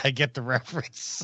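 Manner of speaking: talking through laughter. Answering a question about a game, laughing while talking. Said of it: "I'm laughing 'cause".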